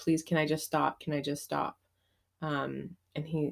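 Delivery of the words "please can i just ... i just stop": begging, imploring tone. Retelling words said to a husband: imitating own pleading. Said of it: "just pleading with him".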